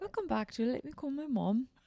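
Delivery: terrible British accent. Welcoming listeners back in a put-on accent: terrible British accent. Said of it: "That's pretty bad".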